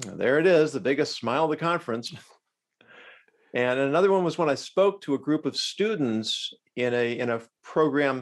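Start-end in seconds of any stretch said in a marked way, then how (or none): none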